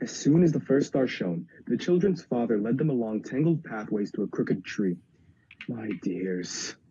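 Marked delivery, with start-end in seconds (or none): 5.7-6.7 groaning, lower and quieter. A father leaves his children at a crooked tree at nightfall, groaning. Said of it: "he groaned".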